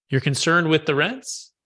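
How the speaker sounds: pitch lifts upward at the end on rents. Demonstrating mirroring someone's concern, with upward inflection. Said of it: "See how it's upward inflection".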